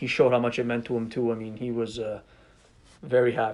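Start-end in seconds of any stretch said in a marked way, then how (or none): 1.3-3.5 deadpan, dead level flat monotone. Speaker describes a player's debut goal celebration, in a monotone. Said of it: "I can't say that more monotonely than that".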